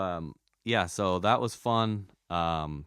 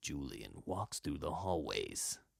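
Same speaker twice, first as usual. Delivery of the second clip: low, slow documentary narrator voice. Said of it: "have the most amazingly low".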